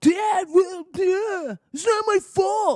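very high, loud, slow, drawn-out whine. Imitating how Donald Trump Jr. sounds to them: whiny Donald Trump Jr. impression. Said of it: "how I imagined Donald Trump Junior sounded".

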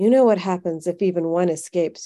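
ordinary talk

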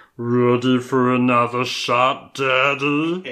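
high, loud demonic voice, Daddy drawn out. Retelling a movie's ending, quoting a character's line, in a weird demonic voice. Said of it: "he has this weird demonic voice on it".

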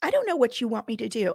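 acted chilly, detached, unsympathetic clinical doctor's tone. Retelling what the doctor said when asked for help: imitating a doctor's cold tone. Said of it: "that was her tone with me".

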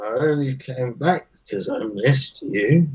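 soft, low mutter under the breath. Retelling a drunken moment, speaking to her: soft mutter. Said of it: "softly and kind of mutters".

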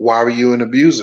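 soft, gentle-voiced delivery. Retelling an interviewer's question on a podcast: imitating a soft voice. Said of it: "Jamel in this soft ass voice was like".

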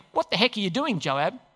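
normal talking voice

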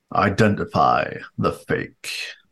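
godlike, disembodied, pronouncing voice. A game narrator voices a voice from the altar, booming voice. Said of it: "A voice booms out from the altar".

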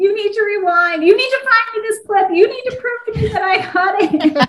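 very high-pitched shouting. Retelling a moment with the husband after a run: imitating own yelling. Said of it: "I was yelling at my husband".

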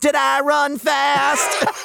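very high, squeaky, creaky character voice. Speaker says what an actor's performance makes them hear; Urkel voice. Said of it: "anytime I try to do an Urkel".

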